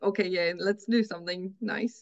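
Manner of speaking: normal talking voice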